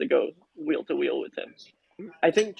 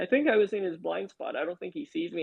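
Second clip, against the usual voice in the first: ordinary talk, nothing marked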